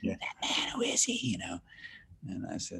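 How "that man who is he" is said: loud stage whisper audible across the table. Retelling what a man asked at the table, imitating his loud whisper. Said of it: "he was whispering".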